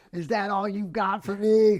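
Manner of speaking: loud, mock-defiant, challenging yell. Speaker describing a habit taken from a Netflix show, retelling a yell. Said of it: "he just goes outside and yells".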